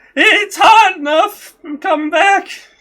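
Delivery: shrill, very loud, high, drawn-out scream. Voicing a raider who screams back at the group: raider screaming back. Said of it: "he screams back at you guys".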